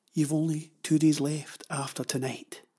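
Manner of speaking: ordinary delivery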